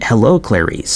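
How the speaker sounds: ordinary talk, nothing marked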